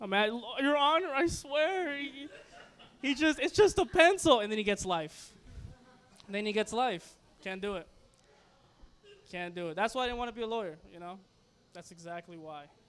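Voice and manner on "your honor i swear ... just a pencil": loud, drawn-out, tearful sobbing. Acting out defending a petty thief in court: mock crying while pleading. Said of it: "And I'm crying".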